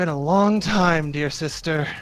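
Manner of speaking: very tired. Voicing a character greeting his sister, very tired. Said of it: "he sounds very tired as he greets you".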